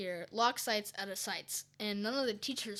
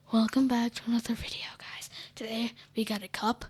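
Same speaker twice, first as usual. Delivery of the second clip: put-on calm ASMR-style voice, louder; 2 semitones higher, 9 dB louder than usual. Joking that their calm mic voice sounds like an asmr channel: imitating an asmr channel voice. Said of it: "I sound like one of those A S M R channels".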